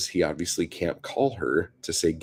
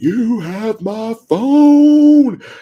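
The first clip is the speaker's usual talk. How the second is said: angry, shrill, furious scream, stretched out; 14 dB louder than usual. Retelling a man in the street yelling up at a woman, retelling a scream. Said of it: "he's like screaming at her".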